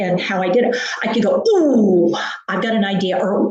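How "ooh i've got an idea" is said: exclaimed, attention-grabbing ooh. Showing how to redirect someone in pain: attention-grabbing "ooh" interjection. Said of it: "And I use my sound, my voice".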